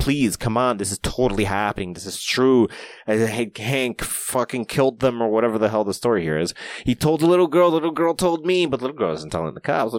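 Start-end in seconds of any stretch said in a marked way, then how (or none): 0.0-2.7 mock-pleading, begging tone. Retelling how she pleaded with the police to listen, imitating her begging. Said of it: "she begged the police to listen".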